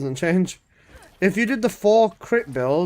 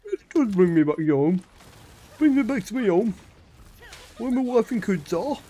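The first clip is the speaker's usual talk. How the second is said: put-on London accent; 4 semitones higher than usual. Showing viewers what a Londoner sounds like, put-on London accent. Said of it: "This is what Londoner sounds like".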